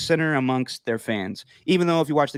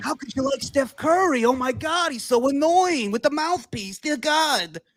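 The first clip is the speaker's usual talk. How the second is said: put-on thick New York accent, very high, drawn out; 12 semitones higher than usual. Imitating a radio host who hated steph curry: thick new york accent. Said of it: "the thick New York accent that hated Steph Curry".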